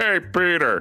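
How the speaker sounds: put-on cartoon sitcom-style voice. Recounting a weekend of practicing Family Guy voices around the house, Joe voice. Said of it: "they started doing doing uh Family Guy voices".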